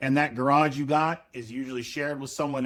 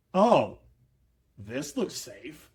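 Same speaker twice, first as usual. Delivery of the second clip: play-acted, dripping sarcasm in swooping sing-song. Describing arriving at an unsafe place, retelling a sarcastic remark. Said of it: "Full sarcasm".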